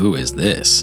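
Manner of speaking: affronted, offended, indignant, demanding tone. Voicing a group of masked figures turning toward a stranger: indignant. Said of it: "indignant kind of like".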